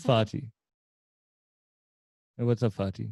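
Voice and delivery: casual, put-on Jamaican accent. Answering a request to hear the line in the accent: jamaican accent. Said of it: "So let me hear it in the accent".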